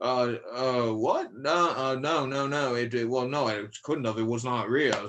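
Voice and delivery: put-on British accent. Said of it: "with his strong British accent".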